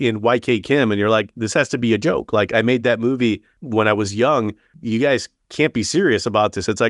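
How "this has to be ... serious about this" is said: plain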